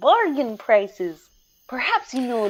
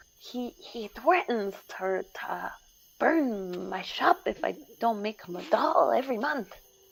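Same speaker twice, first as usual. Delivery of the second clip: hushed half-whisper, under the breath; 8 dB quieter than usual. Voicing a shopkeeper who tells the players about the captain: half-whispering. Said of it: "he kinda whispers".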